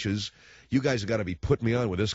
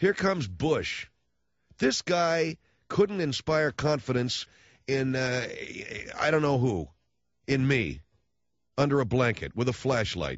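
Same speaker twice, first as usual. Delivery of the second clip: high-pitched, angry ranting voice. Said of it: "I realize I'm sounding angry".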